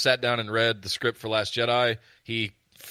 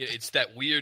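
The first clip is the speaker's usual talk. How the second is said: ordinary talk, nothing marked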